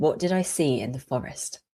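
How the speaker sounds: ordinary delivery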